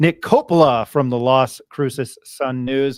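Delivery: slow, loud, careful delivery. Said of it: "I still have to say your name slowly".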